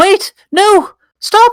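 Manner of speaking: high, loud, squeaky mouse voice. Storyteller voicing a tiny mouse rushing out to stop a fight: small squeaky voice. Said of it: "a small squeaky voice going".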